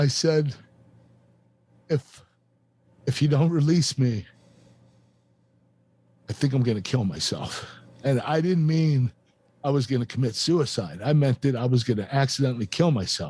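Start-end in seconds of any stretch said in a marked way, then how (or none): 0.0-7.6 crying, tearful, emotionally overwhelmed voice. Recounting asking to be released, getting emotional. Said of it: "I'm getting emotional right now".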